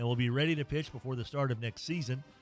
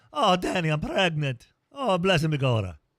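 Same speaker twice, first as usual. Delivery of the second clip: big, loud, sing-song, swooping put-on Irish accent; 3 semitones higher, 8 dB louder than usual. Imitating how the character Maggie O'Hooligan talked: Maggie O'Hooligan's Irish accent. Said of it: "you had to talk like this".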